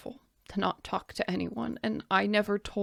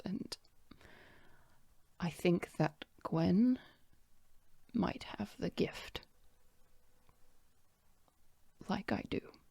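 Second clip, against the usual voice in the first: put-on hushed voice, quieter; 6 dB quieter than usual. Quoting a woman who talks to her about magic, retelling a hushed remark. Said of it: "in a, a hushed voice".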